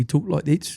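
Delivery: put-on South African accent. Describing a South African festival runner to a listener: South African accent. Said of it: "That's a pretty good South African".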